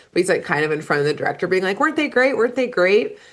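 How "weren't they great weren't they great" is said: acted giddy, eager, high, excited gushing. Retelling a boy running up to the director: imitating an excited gush. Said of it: "also so excited".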